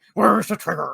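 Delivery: gruff, vigilante-style movie voice. Comparing a game voice actor to a gruff voice: Nolan Batman voice. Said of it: "the Batman from the Nolan movies".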